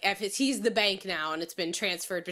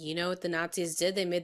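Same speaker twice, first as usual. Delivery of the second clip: normal talking voice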